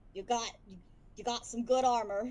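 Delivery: grumbling, put-on dwarf voice. Describing a game, the speaker imitates the dwarf's line in a put-on grumbling dwarf voice. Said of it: "the dwarf will kind of grumble and say".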